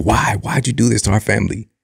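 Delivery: hurt, desperate, anguished screaming outburst. Retelling punching a window at twelve years old: imitating own past screaming. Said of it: "And I'm just screaming".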